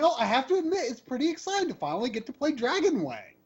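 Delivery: earnest, very high sing-song, swooping. Imitating how the other speaker announces a game's name: imitating a sincere delivery. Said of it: "It's like, it's, like, sincere".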